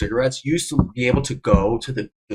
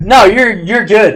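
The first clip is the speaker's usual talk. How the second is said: put-on, slow, pointed, passive-aggressive, insincere tone; 7 semitones higher, 9 dB louder than usual. Replaying how an earlier reply sounded to a friend, mock passive-aggressive. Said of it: "sounded passive aggressive".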